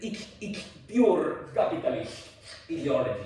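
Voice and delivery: slow, drawn-out voice like a philosopher. Showing students how a philosopher talks: Slavoj Žižek impression. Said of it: "That's what he sounds like".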